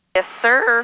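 voice cracking mid-line, breaking on words. Answering a question about wind correction, with a voice crack. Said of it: "Do you like that voice crack".

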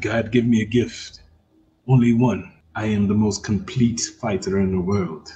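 put-on very deep, very low, soft and hushed Russian accent. Speaker quoting a line from the film Undisputed, as Boyka in a Russian accent. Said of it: "that's my Russian voice".

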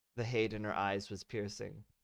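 ordinary delivery, nothing marked

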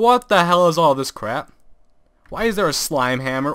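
fast, frustrated, exasperated yelling. A gamer, lost in the game he is playing, yelling. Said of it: "Why am I yelling?".

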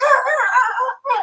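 screaming. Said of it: "and screaming".

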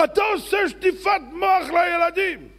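put-on angry tone. Retelling a public argument with a man, retelling an angry accusation. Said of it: "הוא כעס עליי מאוד".

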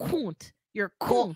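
put-on English-accent pronunciation of "cunt". Speaker mimics how he says a word, imitating an english accent. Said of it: "with his English accent".

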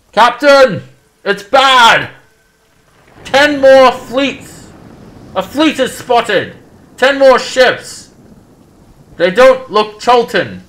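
alarmed, high, loud, frantic shout.

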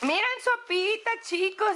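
high, overjoyed, bursting with joy, about to cry. Opening a package sent from Mexico and showing it off: very excited, near tears. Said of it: "Estoy muy emocionada, voy a llorar".

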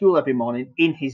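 plain reading voice

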